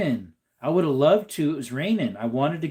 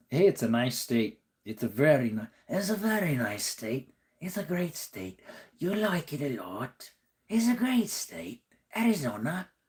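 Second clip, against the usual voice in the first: soft, unconvincing put-on attempt at a man's voice; 5 dB quieter than usual. Talking about arizona, try to sound like a man you can't imitate, a bad impression. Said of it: "I can't sound like him".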